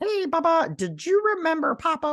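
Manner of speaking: very high, small, squeaky cartoon puppet character voice. Retelling an episode where a hand talks: Elmo voice. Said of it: "it sounds like Elmo".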